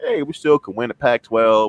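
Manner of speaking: ordinary delivery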